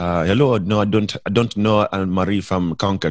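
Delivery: put-on heavy Nigerian accent, laid on thick. Retelling a phone call with a possible father: imitating a thick nigerian accent. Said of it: "he has, like, a really thick Nigerian accent".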